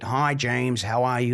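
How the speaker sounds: put-on American accent. Retelling a phone introduction, quoting Bill greeting him, imitating Bill's American accent. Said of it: "American accent".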